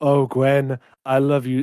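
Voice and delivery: put-on voice with an insincere, fake-sounding tone. Retelling a movie scene, quoting Harry to Gwen: imitating Harry being facetious. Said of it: "being very facetious".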